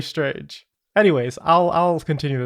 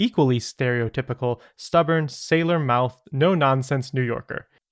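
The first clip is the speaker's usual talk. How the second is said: ordinary talk, nothing marked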